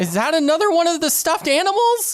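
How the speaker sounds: very high, swooping yell. Running to pull the fire alarm, calling to V: yelling while running. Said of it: "yelling to V".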